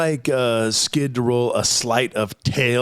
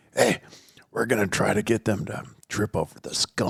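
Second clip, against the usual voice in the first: quiet, secretive whispering; 4 semitones lower, 5 dB quieter than usual. Telling another player a secret plan in character: whispering. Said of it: "I whisper to you".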